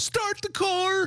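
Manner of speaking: very high-pitched voice. Imagining reacting to a mouse, quoting the IKEA commercial line. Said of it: "I'd be like that ikea commercial".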